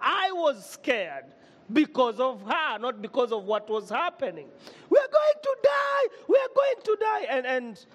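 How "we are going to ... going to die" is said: acted, very high, shrill, loud, frantic shouting. Retelling a plane passenger panicking in turbulence: imitating a woman shouting in panic. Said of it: "This woman started shouting".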